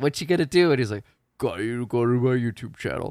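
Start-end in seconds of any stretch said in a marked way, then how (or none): 1.4-3.1 very deep, dropped-down, low voice. Acting out the ASMR guy sending you to his YouTube channel, very deep Fred's Voice impression. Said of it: "He's got a very deep voice".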